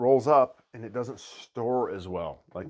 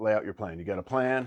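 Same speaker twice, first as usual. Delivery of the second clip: usual speaking voice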